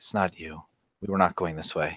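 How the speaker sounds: soft, half-whispered voice. Wari places his hand on her forearm and answers her: half-whispering back. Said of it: "whispers back".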